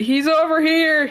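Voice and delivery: high, loud screaming shout. Calling out in character about a figure climbing the wall: screaming out real loud. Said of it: "can I just scream out, uh, "He's over here," real loud?".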